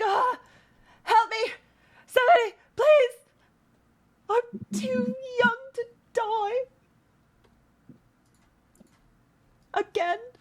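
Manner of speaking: very high, weeping, crying voice. Voicing a character placed on the map, crying for help: Julius crying for help. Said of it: "He's like".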